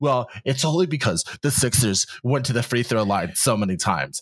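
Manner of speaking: very specific know-it-all tone. Quoting a friend of a friend, a Knicks fan, in a mock know-it-all voice. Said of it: "that's a very specific voice you just did".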